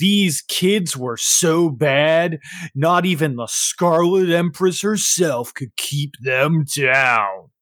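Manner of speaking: put-on band stage announcer voice. Game narrator voicing the band's announcer as the band comes on; voicing a band announcer. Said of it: "their announcer comes across and he goes".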